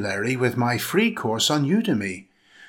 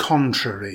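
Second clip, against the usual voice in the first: contrary with CON stressed, falling close. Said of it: "Stress the first syllable".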